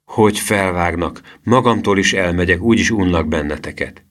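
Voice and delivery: ordinary talk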